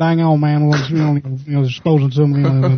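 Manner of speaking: cartoonish Texas accent. Describing another speaker's twang, someone slips into Boomhauer voice. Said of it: "He sounds like Boomhauer when he's doing that, like".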